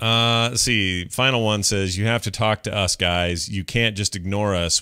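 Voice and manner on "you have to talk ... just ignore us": usual speaking voice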